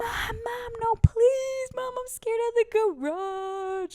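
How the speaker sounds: mock tearful, very high, slow, with garage stretched. Retelling being put in timeout as a child: imitating herself crying. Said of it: "like that, like, crying".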